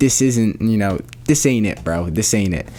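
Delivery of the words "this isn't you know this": plain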